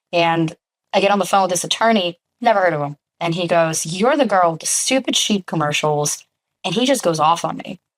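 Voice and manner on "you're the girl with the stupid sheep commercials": ordinary delivery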